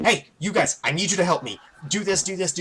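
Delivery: frantic, panicked, rapid-fire frenzied barrage. Describing a character fixing an engine, the speaker voices Tarkras in a panicked frenzy. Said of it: "he's just in an absolute panicked frenzy".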